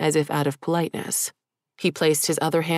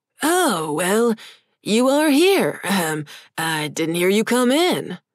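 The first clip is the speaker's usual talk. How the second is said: gravelly, chipper demon voice, swooping pitch; 3 semitones higher, 4 dB louder than usual. Narrating a story, voicing the demon greeting Liam at his desk, gravelly but chipper voice. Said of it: "in a gravelly but chipper voice".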